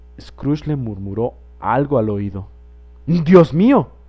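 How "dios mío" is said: breathless, gasping exclamation. The gentleman, after Scrooge whispers in his ear, exclaims: breathless exclamation. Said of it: "exclamó el caballero como si le hubieran cortado la respiración".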